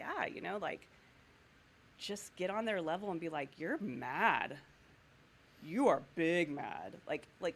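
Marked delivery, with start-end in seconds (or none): 3.6-6.9 very slow, loud, sarcastic drawl. Showing how to talk to someone having a tantrum, sarcastic-sounding. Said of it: "I sound really sarcastic".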